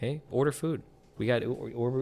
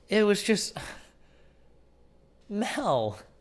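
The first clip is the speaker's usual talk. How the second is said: high, weepy, put-on crying and sobbing; 7 semitones higher than usual. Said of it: "Why are you crying about Game of Thrones".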